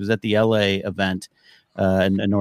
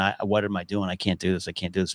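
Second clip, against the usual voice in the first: put-on sobbing, crying, quieter; 2 semitones lower, 7 dB quieter than usual. Retelling a breakdown while writing a book: retelling own past crying. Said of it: "head in pillow on bed crying, going".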